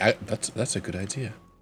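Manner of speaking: low muttering under the breath. Agreeing in character, half-hidden from the others: muttering under his breath. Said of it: "kind of under his breath".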